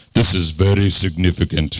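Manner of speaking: put-on old-fashioned TV commercial voice. Teasingly imitating a man as he reads the word, 7-Up commercial voice. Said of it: "he sounds like this".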